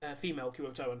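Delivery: ordinary delivery, nothing marked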